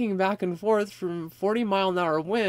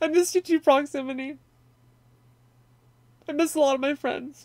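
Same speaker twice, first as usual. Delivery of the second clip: choked-up tearful crying, voice cracking and breaking high; 7 semitones higher than usual. A streamer talking to viewers on stream, crying. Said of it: "Sorry to cry".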